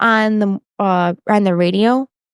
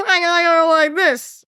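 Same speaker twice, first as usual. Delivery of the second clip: horrible high squawking put-on voice. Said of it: "that's a horrible impression".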